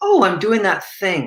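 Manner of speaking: neutral, open, curious tone, slightly high. Demonstrating noticing one's own looping mind, in a curious, open, neutral tone. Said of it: "you hear the tone in my voice. It's it's curious. It's open. It's neutral".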